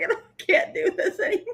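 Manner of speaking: talking through laughter. Reacting to a listener's joke letter, laughing while talking. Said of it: "my eyes are all watery from laughing".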